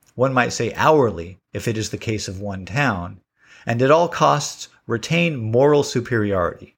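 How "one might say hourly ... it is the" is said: plain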